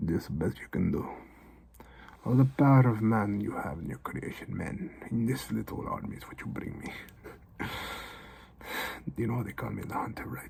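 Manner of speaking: whispered, breathy, hushed put-on Russian accent. Telling a story, voicing the character called the hunter, in a russian accent. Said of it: "you hear with a Russian accent".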